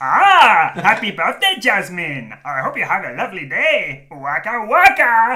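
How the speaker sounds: belted out high and loud. Doing a birthday shout-out for Jasmine as Genie imitating Fozzie Bear: Fozzie Bear voice. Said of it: "Genie doing Fozzie Bear".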